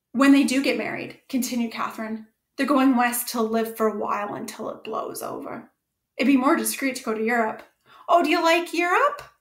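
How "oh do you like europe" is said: abrupt, sudden, high-pitched exclamation. Narrator voicing a woman joining the talk about going to europe, exclaiming. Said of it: "She exclaimed surprisingly".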